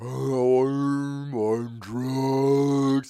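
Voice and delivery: spaced-out, drugged drawl. Retelling a thing he used to do: imitating slow drugged talk. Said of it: "He'd talk real slow like he's on drugs".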